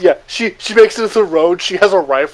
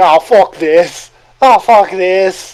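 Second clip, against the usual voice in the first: acted, very slow, drawn-out Cockney screaming; 4 dB louder than usual. Voicing a fleeing character: Cockney screaming. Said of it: "incoherent Cockney screaming".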